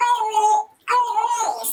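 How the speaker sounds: very high, wailing, silly mocking voice. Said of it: "calling out and making".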